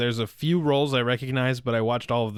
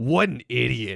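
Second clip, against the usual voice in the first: mock, mad-at-everything, angry hothead tone. Retelling how Bakugo reacts after beating a villain: imitating Bakugo angrily. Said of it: "he's always just mad no matter what".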